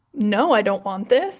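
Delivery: ordinary delivery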